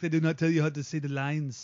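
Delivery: put-on Austrian-accented voice. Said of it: "And I attempted an Arnie".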